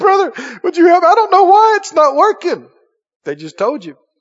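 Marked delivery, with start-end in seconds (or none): 0.0-2.7 acted tearful, desperate, high crying voice. Imitating people who come up asking for help: imitating someone crying. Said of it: "when people come up crying".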